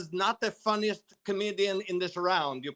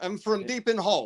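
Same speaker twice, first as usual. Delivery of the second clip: put-on Russian-accented English. Playing a Russian man, pointing out the accent on "hole": Russian accent. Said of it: "you hear it when I say hole".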